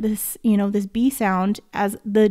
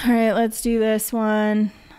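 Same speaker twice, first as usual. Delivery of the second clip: bored, uninterested, offhand, going-through-the-motions tone. Teacher sitting back relaxed in a chair during a lesson, sounding bored. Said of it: "Like I just sound bored, right?".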